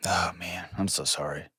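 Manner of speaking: soft, sympathetic tone.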